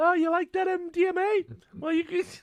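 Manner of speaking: very high character voice, pitched an octave too high. Describing a drug dealer guy in a scene, imitating a too-high voice. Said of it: "his his voice is like an octave too high almost".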